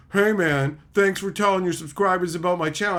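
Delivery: pointed, needling, passive-aggressive tone. Retelling a viewer's later message: imitating passive-aggressive thanks. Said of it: "all passive aggressively".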